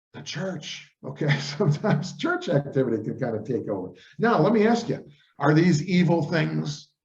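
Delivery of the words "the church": very quiet, hushed, confiding whisper. Listing volunteer work that can take over one's time: whispered 'the church'. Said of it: "I'm going to whisper this".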